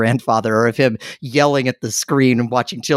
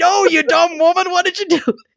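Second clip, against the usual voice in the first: very high, out-of-control screaming outburst. Retelling how the grandfather reacted to the lady's answer on the show, retelling a scream. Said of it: "He just started screaming".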